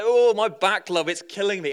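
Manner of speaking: loud, exaggerated, comic put-on northern English accent. Retelling how he hobbled down the aisle to old ladies; mock northern accent. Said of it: "In a kind of mock northern accent".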